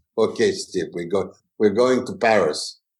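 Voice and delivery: put-on English spoken with a Russian accent. Imitating a russian travel agent booking a trip: russian accent. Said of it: "a real Russian who talk like this".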